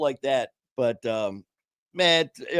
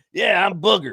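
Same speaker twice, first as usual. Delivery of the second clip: mock proud, chest-out, loud, pitched-up voice; 5 semitones higher, 6 dB louder than usual. Retelling how an old-timer introduced himself, imitating his proud tone. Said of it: "he says it with pride".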